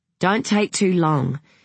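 plain

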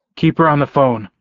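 plain reading voice

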